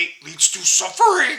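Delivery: sing-song sage voice with large swooping pitch swings. After saying he sounds like Yoda, quoting him: Yoda impression. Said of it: "I sound like Yoda now".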